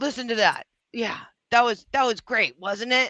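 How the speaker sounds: self-satisfied, self-admiring, pleased tone. Mocking someone reviewing his own videos: imitating Dick Bag. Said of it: "He's like".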